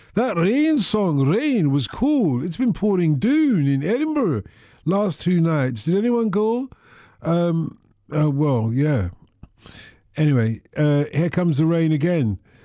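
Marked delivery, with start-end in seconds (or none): 0.2-6.7 put-on speaking in Scottish accent. Presenter reads out a listener's message from Edinburgh, Bobby's message, Scottish accent. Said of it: "I've got to do it in the accent because he's written it in the accent".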